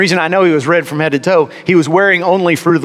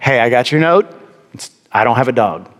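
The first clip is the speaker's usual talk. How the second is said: mock very calm, steady, composed, even voice; 5 semitones lower than usual. Retelling speaking to a man who left a note, recalling a very calm voice. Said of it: "In a very calm voice".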